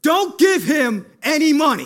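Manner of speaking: sudden loud scary call. Retelling how the bakery owner suddenly called out as the speaker pulled out money: loud voice. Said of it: "I hear a loud voice come out of nowhere".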